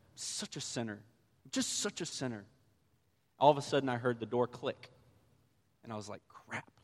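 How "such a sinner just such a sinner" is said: mumbled under breath, much quieter. Speaker retells standing in the temple, mumbling to themself under their breath. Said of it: "I was just mumbling under my breath".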